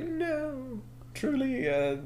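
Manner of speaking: very high, mock heroic, declaiming tone. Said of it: "And then Dan is like".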